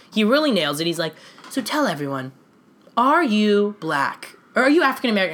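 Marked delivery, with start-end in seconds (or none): 1.5-5.4 pointed, aggressive, disappointed tone, let down but not angry. Retelling an interview, imitating the interviewer's questions: Matt Lauer questioning tone. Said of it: "That's the Matt Lauer tone".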